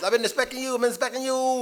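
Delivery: very high, shrill, loud, fast rattled-off jabber. Imitating the man who answered the door greeting him, talking real fast. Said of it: "And he was talking real fast".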